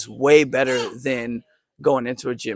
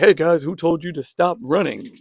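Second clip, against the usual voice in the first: puffed-up, swaggering macho tough talk, bravado; 4 semitones higher than usual. Retelling how the guy talked to the fighters: imitating a swaggering alpha male. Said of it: "talking to some of the fighters, like".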